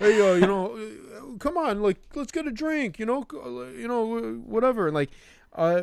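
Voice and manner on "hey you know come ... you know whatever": very high, pleading, halting lonely-guy voice. Mocking text messages asking people to get a drink: imitating a lonely guy. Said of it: "He actually sounds like the loneliest guy in the world".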